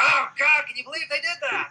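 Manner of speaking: very high, spontaneous, unscripted gut reaction. Showing how an unscripted reaction sounds: off-the-cuff natural reaction. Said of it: "if we were to go real off the cuff".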